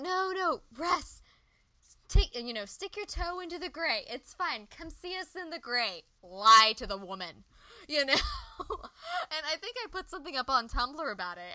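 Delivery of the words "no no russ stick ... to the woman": mock shouting, yelling. Recalling watching a scene on tv, retelling yelling at the tv. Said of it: "I'm yelling at the TV and I'm like".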